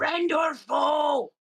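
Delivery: loud, high-pitched stage whisper. A character calls up to a beaked face peeking over the wall; loud whisper. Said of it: "I'll whisper, but very loudly whisper".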